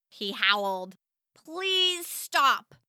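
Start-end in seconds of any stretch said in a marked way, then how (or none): 1.4-2.6 firm, forceful tone, pitched up a little. First-person narrator telling Max to stop his noises, firm command. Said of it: "I firmly commanded".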